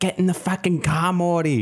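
put-on Australian-accented speech. Quoting a bit from the Australian Rick and Morty: Rick and Morty Australian voice. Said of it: "that bit from the Rick and Morty Australian one".

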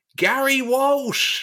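put-on high shout in a Mediterranean accent. Retelling how Chummy called out a goalkeeper's name at each save: Chummy's Mediterranean-accent shout. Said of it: "in a Mediterranean accent, would shout".

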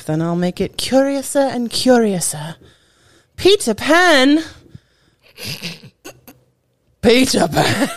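really bad, put-on English accent. Podcast host hinting at this week's Epcot pavilion, in a really bad Disney English accent. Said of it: "my really bad Disney English accents".

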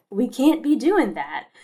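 faint, light put-on Kentucky drawl. Quoting his catchphrase for admonishing people not following protocol, imitating a very light Kentucky drawl. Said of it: "in his very light Kentucky drawl".

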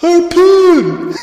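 very high, shrill, loud yell. Retelling how Lavitz calls out his special attack: imitating Lavitz yelling. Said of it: "he yells at Harpoon".

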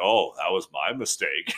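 mock sarcastic tone. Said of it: "the sarcasm".

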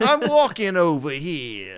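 weak, put-on New York accent, loud and swooping. Speaker says every try is kind of sad, then: attempted New York accent. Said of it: "I feel like a lot of people can't do a great New York accent ... every time I try, it's like kind of sad".

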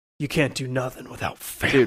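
deep, dropped action-movie voice, way low. Quoting a movie character's catchphrase about family: Vin Diesel impression. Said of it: "Vin Diesel's character is always like".

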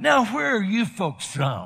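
eager car salesman voice. Retelling someone approaching them at conference: imitating a grinning used car salesman. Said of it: "is grinning like a used car salesman and say to us".

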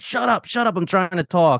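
high-pitched yelling. Retelling a scene where a character is yelling at Augie: imitating someone yelling. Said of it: "he's yelling at Augie".

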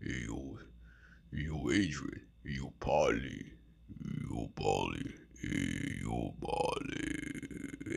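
very slow, breathy whisper. Doing an impression of Sylvester Stallone. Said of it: "That's my impression of Sylvester Stallone".

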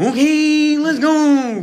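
very high, loud, excited announcer-style meme voice. Retelling how a ride announcer sounded: imitating the "Okay, let's go" guy. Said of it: "He sounded like the".

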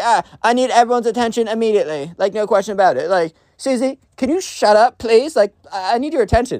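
put-on high, spoiled-kid voice, demanding and attention-seeking. Retelling a school story, imitating a spoiled kid on a microphone. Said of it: "It's like".

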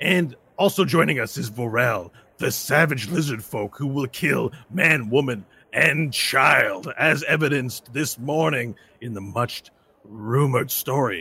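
arena match caster announcement voice. Arena caster introducing the fighters before a grudge match, sports announcer voice. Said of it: "I'm [name], and I'm going to be your caster for this particular match".

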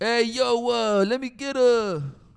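put-on very high, very slow, drunk East Coast drawl. Acting out your own late-night order at a Jack in the Box window, in a put-on drunk East Coast accent. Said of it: "I always talk like in the East Coast accent".

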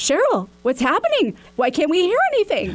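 put-on high, swooping yell with Wisconsin accent. Retelling a man calling out on a funeral Zoom, mock-yelling in Wisconsin accent. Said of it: "yelling in his Wisconsin accent".

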